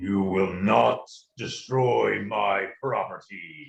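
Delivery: very low, deep-register voice. A game player voices a character answering another player; deep voice. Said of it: "the deep voice will say".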